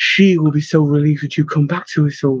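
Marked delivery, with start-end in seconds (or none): none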